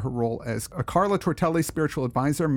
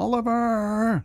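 excited, pitched-up exclaiming; 8 semitones higher than usual. Reading a performer's bio, saying the title Oliver with excited exclamatory emphasis. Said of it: "Because it's got an exclamation point on it".

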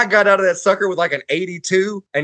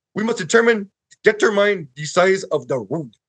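put-on thick Russian accent. Retelling a professor's words about rods: imitating a thick russian accent. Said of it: "he had a thick accent".

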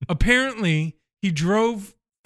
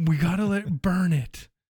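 whispered words. Retelling a scene where the boss comes in: imitating a whisper. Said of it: "he whispers".

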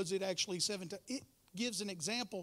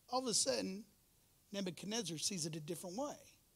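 normal talking voice

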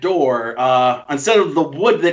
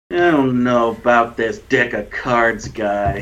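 silently judging, judgmental aside, much lower pitch; 5 semitones lower than usual. Voicing men at a card table sizing up a newcomer, silently judging. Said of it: "silently judging you".

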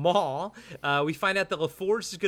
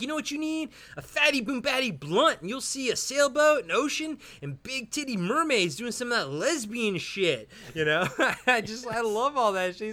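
nonstop high-pitched mock yelling rant; 8 semitones higher than usual. Recapping a scene where Jay yells at a staring man, imitating Jay yelling. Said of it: "Jay's just sitting there just yelling at him".

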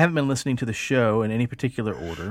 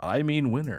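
creepy game show host toy voice. Retelling what a creepy talking game show toy always said: Mister Game Show voice. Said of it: "this really creepy, like, howdy doody mixed with, like, a game show host guy".

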